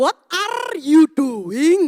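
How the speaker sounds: put-on very loud Indonesian accent, trilled R in "are". Teacher retelling what she says to her students, with a strong rolled R. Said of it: "Langsung satu kelas itu tertawa semua dengan R saya".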